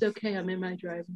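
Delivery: soft, put-on, completely unbothered calm. Retelling Chrissy's reaction to Friday the Thirteenth, the speaker imitates her calm. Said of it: "Chrissy being so calm about it".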